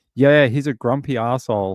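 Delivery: plain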